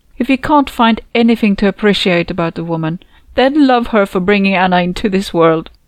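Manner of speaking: plain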